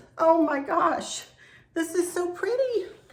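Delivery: emotional, teary, high-pitched, on the edge of tears. Showing viewers something the speaker just received, speaking teary and in tears. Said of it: "I'm in tears".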